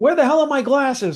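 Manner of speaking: frantic, shrill, very high, loud angry yelling. Retelling how Pops searches for his glasses: imitating Pops yelling. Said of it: "yelling so much".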